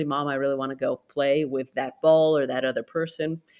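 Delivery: plain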